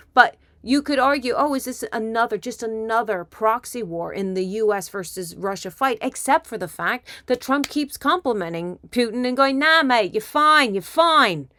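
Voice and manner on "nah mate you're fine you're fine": put-on British accent, pitched up. Imitating Trump complimenting Putin, in Trump's best Britishy accent. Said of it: "in his best Britishy accent".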